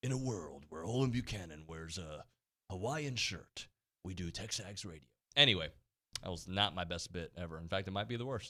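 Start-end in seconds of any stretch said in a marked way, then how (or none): 0.0-5.0 hushed movie trailer announcer narration voice. On their radio show, a co-host answers in a movie trailer voice. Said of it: "Does that sound like a movie trailer voice?".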